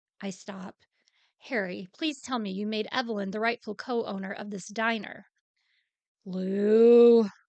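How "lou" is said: bellowing, much louder. Harry answers a question about Evelyn owning the diner, in a warning tone. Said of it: "A siren of warning bellows in his voice".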